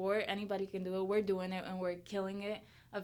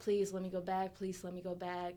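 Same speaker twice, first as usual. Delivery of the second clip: acted, put-on pleading voice; 4 dB quieter than usual. Telling a story about begging their mom as a teenager; retelling begging. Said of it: "And then I begged her".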